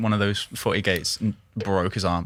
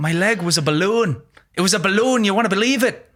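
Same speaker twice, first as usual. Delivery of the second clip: very high-pitched leprechaun character voice; 11 semitones higher, 4 dB louder than usual. Quoting a fighter describing his broken ankle: Conor McGregor impression. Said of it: "He sounds like a leprechaun when I do it".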